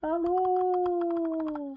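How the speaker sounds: very high, loud, silly, dopey voice.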